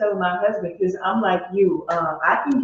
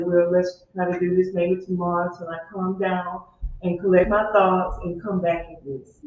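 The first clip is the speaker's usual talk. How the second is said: plain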